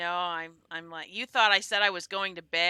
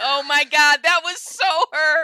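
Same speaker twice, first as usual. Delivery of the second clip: put-on scream, higher and louder; 9 semitones higher, 12 dB louder than usual. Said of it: "I was screaming".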